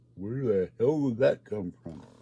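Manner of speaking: ordinary talk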